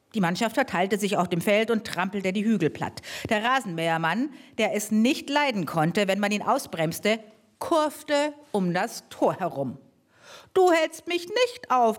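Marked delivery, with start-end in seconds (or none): 10.5-12.0 high-pitched, bellowing, roaring shout. A narrator reads the lawnmower man's line by the goal: roared. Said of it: "brüllte er".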